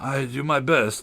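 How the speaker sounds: sulky, sullen, very slow and drawn out. Reading a story, the messenger answering the king: sullen tone. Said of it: "the messenger said in a sullen tone".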